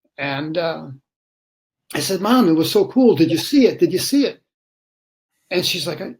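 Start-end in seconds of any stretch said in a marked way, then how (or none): none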